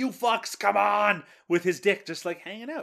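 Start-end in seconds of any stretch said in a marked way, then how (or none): 0.0-1.2 slow, long, stretched-out put-on scream. Recapping a movie scene where a man runs around screaming: retelling a scream. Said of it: "screaming, like".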